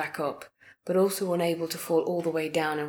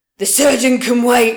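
very loud, high, wavering, warbling bellow; 7 semitones higher, 15 dB louder than usual. Narrator reads a preacher's line, his once commanding voice wavering; bellowing with a warble. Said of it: "the preacher bellowed, though there was a warble to his once commanding voice".

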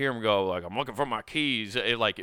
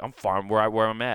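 put-on serious tone; 4 dB louder than usual. Retelling a plastered man's reply: imitating a serious reply. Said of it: "And then he got real serious".

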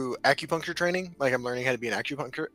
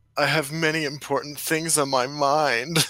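creepy, intoning priest voice, mind drawn out; 4 dB louder than usual. Recalling the first clip recorded and tested for Twitch, Father Despair creepy priest voice. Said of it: "the like Father Despair creepy priest voice".

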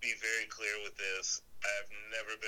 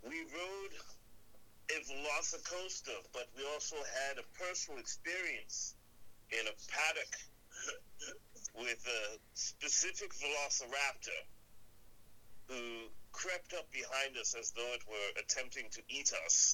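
put-on Australian accent, pitched up; 5 semitones higher than usual. Recounting a Velociraptor encounter at Universal, in an Australian William Shatner impression. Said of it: "I love how you're doing a Australian".

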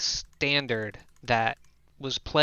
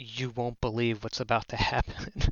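hushed whisper, slower pace. Gaston, on the horse, leans over toward the group, whispering as Gaston. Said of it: "Like whispering into the horse's ear".

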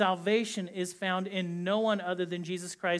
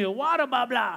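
put-on thick Boston accent, higher and louder; 5 semitones higher, 5 dB louder than usual. Retelling what a woman with a strong accent says, imitating a thick boston accent. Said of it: "her Boston accent is so strong".

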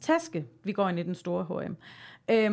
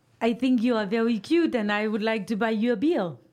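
mock French accent in English; 3 dB louder than usual. Asked to show speaking English with a French accent: fake French accent. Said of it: "jeg talte engelsk altså med fransk accent".

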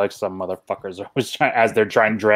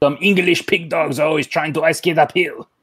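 put-on, pitched-up French-accented English; 7 semitones higher than usual. Voicing the French knight saying the line: put-on French accent. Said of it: "With his French accent".

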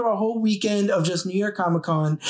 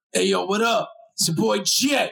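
put-on, aggressive-sounding voice. Pretending to play a recorded clip from Jet: imitating Jet, put-on aggressive voice. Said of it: "Why is he so aggressive?".

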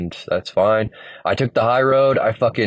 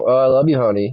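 mock-sarcastic tone; 4 semitones higher than usual. Retelling what she said after waking him at five in the morning, mock-sarcastic. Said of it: "Like sarcastically".

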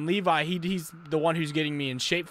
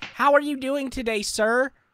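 put-on polite customer service voice, pitched up; 9 semitones higher, 4 dB louder than usual. Showing the voice he uses with customers: a put-on customer service voice. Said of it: "I use the whitest voice ever".

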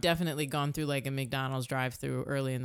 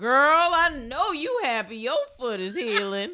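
loud, high-pitched calling out; 10 semitones higher, 9 dB louder than usual.

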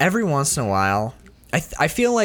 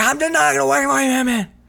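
mock screaming, higher pitch; 12 semitones higher, 4 dB louder than usual. Recounting a scene where a character screams at another, retelling a scream. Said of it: "he's screaming and he's like".

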